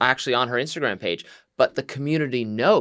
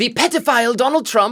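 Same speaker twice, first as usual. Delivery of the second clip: bad, weak put-on Swedish accent, higher pitch; 11 semitones higher, 6 dB louder than usual. Recounting a video, speaker doing a bad Greta Thunberg impression. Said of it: "not a very good Greta accent".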